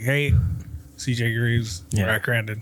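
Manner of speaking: low, flat, dead-level monotone, rattled off. Recalling CJ Greaves giving name and number, the speaker is imitating CJ Greaves' monotone. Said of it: "CJ's really like monotone".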